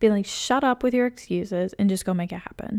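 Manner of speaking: plain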